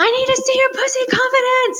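burst of very high excited shouting. Recalling a moment while teaching a class, the speaker is retelling an excited shout. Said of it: "I just shouted like".

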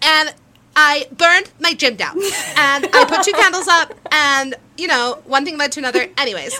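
loud, breezy, offhand, casual voice. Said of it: "Why do you sound exactly like her?".

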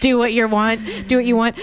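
plain

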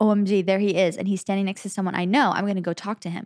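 ordinary talk, nothing marked

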